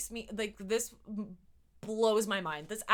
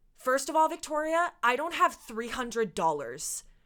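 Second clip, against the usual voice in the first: acted indignant, affronted, offended tone; 3 semitones higher, 4 dB louder than usual. Retelling what the teacher said to a seven-year-old: imitating an insulted teacher. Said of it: "in this tone of voice".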